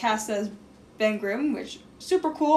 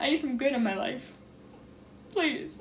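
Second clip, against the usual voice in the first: desperate, breathy, hushed voice, near a whisper; 7 dB quieter than usual. Speaker appealing directly to the director, desperate pleading. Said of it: "Do you hear the desperation in my voice".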